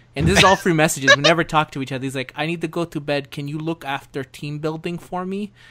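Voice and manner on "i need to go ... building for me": put-on Finnish-accented speech. Retelling a teammate's late-night messages: Finnish accent imitating Penta. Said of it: "That fucking Finnish accent".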